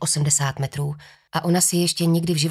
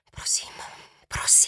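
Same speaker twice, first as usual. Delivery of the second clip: soft whisper under the breath. Kim watching the swinging rope from too far away, whispered. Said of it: "šeptala Kim".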